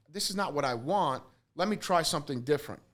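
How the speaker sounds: ordinary delivery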